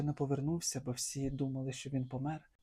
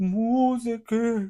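very loud, high, drawn-out shout, Музики stretched out; 9 semitones higher, 12 dB louder than usual. Reading a tale aloud, the narrator gives the emperor's cry: shouted cry. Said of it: "кричав імператор".

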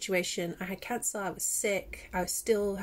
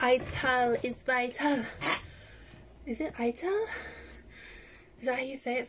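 puffing, winded, short of breath; 4 semitones higher than usual. Reading about a diet just after running up the stairs: out of breath. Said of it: "Sorry, I'm out of breath".

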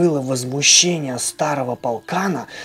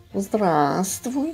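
tender, kindly, affectionate, lightly raised voice; 5 semitones higher than usual. Narrating a children's story, the cat greets the puppy, affectionate. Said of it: "ласково сказала она".

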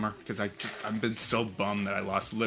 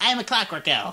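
high-pitched chipmunk voice. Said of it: "sounded just like a chipmunk voice".

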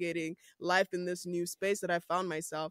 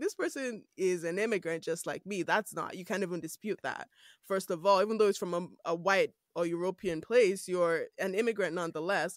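ordinary talk

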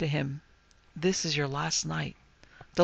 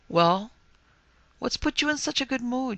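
suspicious, distrustful tone, pitched up; 7 semitones higher than usual. She hears him laughing as he comes down the ramp and asks suspiciously. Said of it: "she asked suspiciously".

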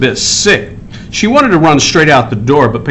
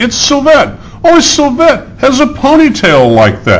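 very high, shrill, called-out cry; 10 semitones higher than usual. Narrator voices the friends spotting a picture above the wall, shouting. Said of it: "shouted her friends".

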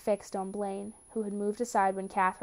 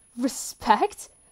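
loud, disbelieving, incredulous tone; 3 semitones higher, 7 dB louder than usual. A son repeats his father's word back to him, incredulous.

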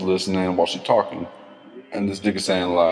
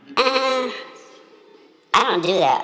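mocking way of talking, higher. Retelling what the woman said when told to get to work: imitating the woman's way of talking. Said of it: "and talking like this".

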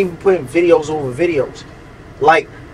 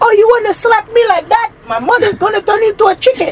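put-on very high Haitian accent. Recalling how you were being funny in the background of a video, repeat it in a put-on Haitian accent. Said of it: "I did the Haitian accent in the video".

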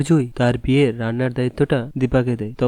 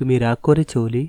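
ordinary delivery

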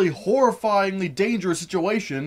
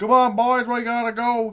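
fake, put-on Southern US accent; 3 semitones higher than usual. Quoting a movie character's line, trying on a put-on Southern accent. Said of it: "I'm trying to get into a southern accent here".

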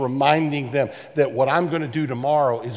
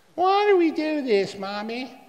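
put-on very high, swooping, drawn-out whiny child's voice; 12 semitones higher than usual. Acting out children asking their parents about the yearly Passover, in a very whiny voice. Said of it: "in a very whiny voice".

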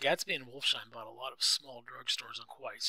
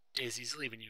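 plain reading voice

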